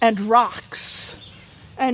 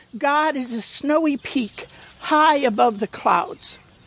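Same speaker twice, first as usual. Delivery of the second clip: ordinary delivery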